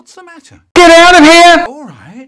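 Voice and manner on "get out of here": sudden, very loud, high-pitched yelling. In an acted scene, one character shouting at another, shouting. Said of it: "No need to shout".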